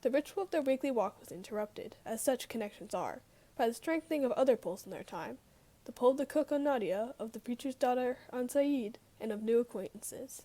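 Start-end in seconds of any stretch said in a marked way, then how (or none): none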